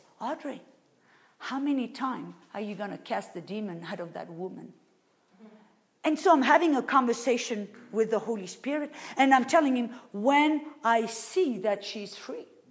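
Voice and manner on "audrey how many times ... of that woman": very soft, quieter voice. Retelling words she heard inside her, in a very soft voice. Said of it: "very soft on the inside of me".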